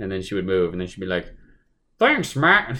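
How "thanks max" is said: irritating, annoying, very high-pitched voice. Retelling a game character thanking the player, imitating her annoying voice. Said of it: "That's kind of the how she sounds".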